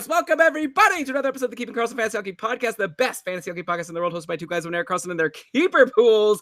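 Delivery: very fast, rattled-off delivery. Podcast host opening a new episode, saying it so fast. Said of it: "I say it so fast because it's fun".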